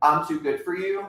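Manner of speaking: ordinary delivery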